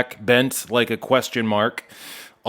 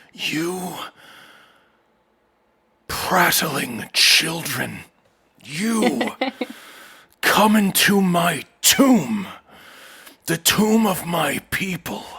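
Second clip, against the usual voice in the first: furious anger, higher; 5 semitones higher than usual. Voicing a character who answers the adventurers after hearing their story: purple with rage. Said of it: "eventually he is purple with rage".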